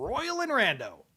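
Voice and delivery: radio announcer voice. Picking horses for a race, the speaker names two horses: radio announcer voice. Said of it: "That's that's my radio voice".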